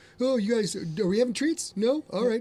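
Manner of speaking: high, easygoing, sweet pet dog voice. Showing what her dog sounds like, voicing the dog Reese. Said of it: "Reese's is very much like her personality".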